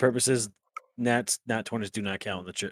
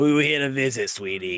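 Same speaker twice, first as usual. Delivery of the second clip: put-on sweet, elderly old lady voice; 3 semitones higher than usual. Voicing an old lady at the hospital front desk: old lady voice. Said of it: "that voice!".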